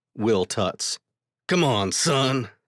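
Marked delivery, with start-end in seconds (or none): 1.5-2.5 put-on grown-up, fatherly dad-style voice. Reading a story aloud, voicing a character's line: deeper voice than normal. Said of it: "he says in a deeper voice than his normal one".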